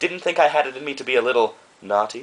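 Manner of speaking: usual speaking voice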